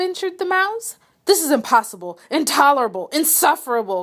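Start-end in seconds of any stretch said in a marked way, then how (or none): 1.2-4.0 angry cry shaking with furious disbelief. Narrator reads Bear crying out at the mouse, shaking with anger and disbelief. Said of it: "cried Bear, shaking with anger and disbelief".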